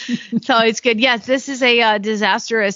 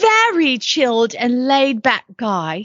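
terrible fake English accent. Reading out a listing, in a terrible English accent. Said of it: "I'm a terrible English accent".

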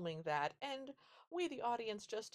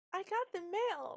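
mock, very high, slow, gleeful, proud little-kid voice; 12 semitones higher, 4 dB louder than usual. Retelling a small child bursting in with the mail: imitating joyous, excited pride. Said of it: "delivers every single line with just the joyous, excited pride".

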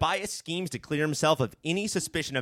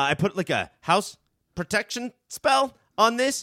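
put-on nervous voice, pitched higher; 6 semitones higher than usual. Retelling a TV character's lie about a protection spell: imitating a nervous liar. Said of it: "He's so nervous and lying".

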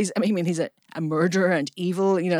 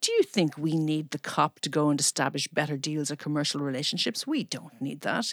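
soft, arrogant, snooty, snotty tone; 2 semitones lower, 5 dB quieter than usual. Quoting a man's comment reported in the press, mock-snotty remark. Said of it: "he had a really snotty comment".

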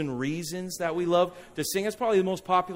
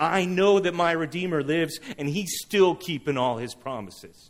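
ordinary delivery

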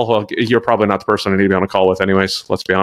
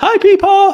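put-on eager, excited voice, very high pitched; 5 dB louder than usual. Retelling how Adam ran in during a podcast: imitating an excited greeting. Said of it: "he was all excited".

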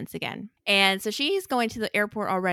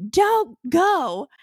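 sudden, very high, loud yell; 10 semitones higher, 7 dB louder than usual. Recounting a scene where a woman confronts a man about leaving, retelling a yell. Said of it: "And then she just yelled".

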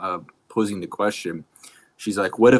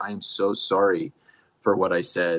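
put-on tearful crying voice.

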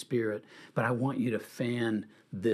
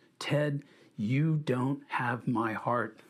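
mock caring yet firm, assertive but never demanding voice. Retelling what the Lord said in prayer: imitating the Lord's loving, assertive voice. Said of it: "in a loving but very, um, not demanding, but very assertive voice".

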